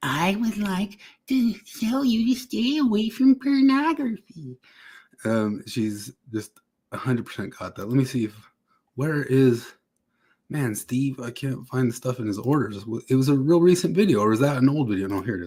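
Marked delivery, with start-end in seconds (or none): 0.0-4.6 sweet, very high, slow lady voice.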